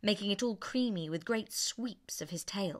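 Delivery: ordinary delivery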